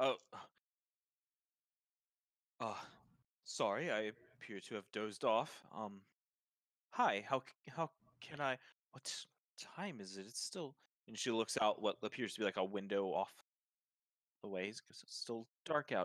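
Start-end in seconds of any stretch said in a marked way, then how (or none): 0.0-10.3 put-on startled, just-woken woman's voice. Describing a woman at the bar jolting awake, imitating her startled reply. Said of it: "like jumps a bit and goes".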